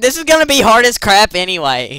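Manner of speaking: loud yell swooping in pitch. Streamer fiddling with game settings, yelling. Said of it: "I'm sorry for yelling".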